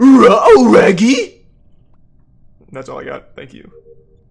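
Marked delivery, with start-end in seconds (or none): 0.0-1.5 loud, very high, swooping cartoon dog voice. Showing the only impression the speaker can do: put-on cartoon voice. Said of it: "That's my only impression".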